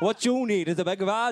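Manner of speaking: put-on Welsh accent. Joking about heckling at the other speaker's show tomorrow, in a Welsh accent. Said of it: "In a Welsh accent".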